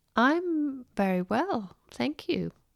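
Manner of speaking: high-pitched, hesitant delivery.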